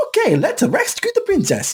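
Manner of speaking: very high, bouncy, energetic voice, pitch swinging wide. Describing how the voice actor always plays him, say it as high-energy Mario. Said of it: "high energy Mario".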